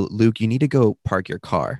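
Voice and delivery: plain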